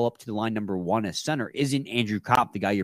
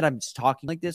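ordinary talk, nothing marked

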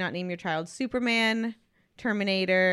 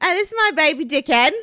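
very loud, high, put-on Australian accent; 8 semitones higher, 9 dB louder than usual. Riffing on a silly baby name, in a put-on Australian accent. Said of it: "Is that an Australian accent?".

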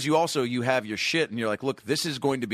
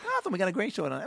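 put-on slurred talk-show host voice, higher pitch; 8 semitones higher, 4 dB quieter than usual. Imitating a talk-show host having a stroke: Jay Leno having a stroke. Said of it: "Jay Leno having a stroke will go".

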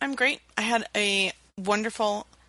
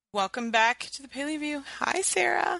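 slightly hoarse, croaky voice, pitched up; 6 semitones higher than usual. A host opens the show and greets the co-host, a little croaky. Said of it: "You sounded you're croaky a little bit".

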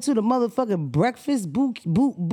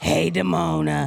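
raspy, rough, creaky, cigarette-worn smoker's voice; 6 semitones lower than usual. Mocking listeners' voices on voicemails: imitating a caller's smoker voice. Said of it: "You sound like you hit your cigarette".

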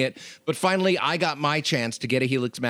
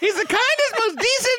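very high squeaky cartoon mouse voice with Queens accent. Asked to do a voice, showing off a Mickey Mouse voice with Queens accent. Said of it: "Queens, New York from creeping into my Mickey Mouse".

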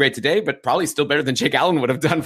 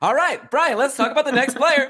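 very high-pitched podcast presenter voice; 11 semitones higher than usual. Showing how he talks differently from his regular voice, podcast voice. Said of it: "and then on the podcast i like".

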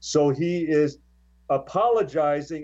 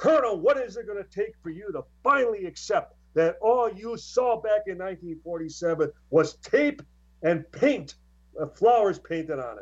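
high-pitched berating scream, voice riding high; 5 semitones higher than usual. Retelling a major's angry phone call to a colonel: retelling a scream. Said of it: "he starts screaming at him".

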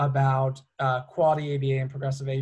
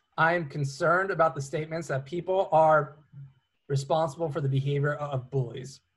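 usual speaking voice

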